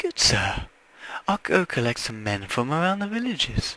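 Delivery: put-on, swooping female voice. Reading a game character's reply to a quest giver: put-on female voice. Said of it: "I had to get a female voice for this".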